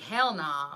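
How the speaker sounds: imitated, put-on Southern accent. Talking about loving people's accents, the speaker tries out a Southern accent. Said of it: "I want to live in the South because I want to be like".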